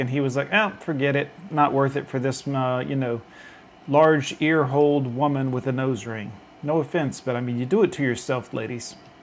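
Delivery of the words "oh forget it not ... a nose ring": ordinary delivery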